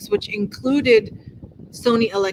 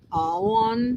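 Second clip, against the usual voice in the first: Southern drawl stretching on into two syllables. Explaining how a southern accent stretches one-syllable words: stretched southern drawl. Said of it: "in the southern accent, you can take a single syllable wor- word and stretch it".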